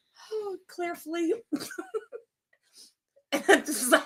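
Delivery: laughing while talking. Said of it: "Breathe, [name]".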